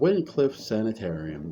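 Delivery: ordinary delivery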